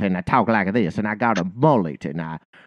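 fake, laid-on, hacky Southern accent. Mocking a comic from an MTV show's act, doing a hacky Southern accent. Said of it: "this very hacky, like, Southern".

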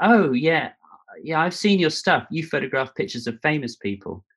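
belittling, high, dismissive tone. Retelling what another photographer said at an event: imitating someone's derisive tone. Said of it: "in a derisive way".

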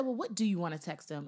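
plain

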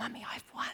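soft, breathy, hushed whisper. Retelling what Meg whispers after a sibling argument: imitating Meg whispering. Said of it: "she whispers in, in my ear".

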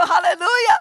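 high, shouted, preacher-style exclamation. Speaker recalls a transformed-looking man who shouted a word at them, imitating a shout. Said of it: "gritaba una palabra que me daba escalofrío".

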